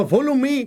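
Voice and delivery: high-pitched Indian accent English.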